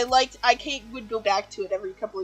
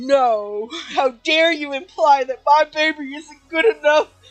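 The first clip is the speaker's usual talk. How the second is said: mock indignant fury, higher and louder; 6 semitones higher, 7 dB louder than usual. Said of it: "you heard the inhale and you knew she had entered this mode".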